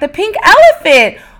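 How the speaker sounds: high, loud, thrilled, excited exclamation blurted out.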